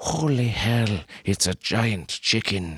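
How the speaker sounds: put-on man's voice with Scottish accent, Scottish brogue. Narrator voicing a man's line in a story, in a man's Scottish brogue. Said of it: "said a man's Scottish brogue".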